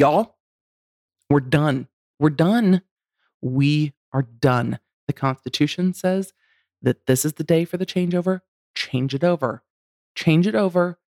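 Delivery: scolding, motherly, laying-down-the-law tone. Speaker imagines telling Congress the deadline is here, in a mom voice. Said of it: "I'm going to have to mom voice Congress".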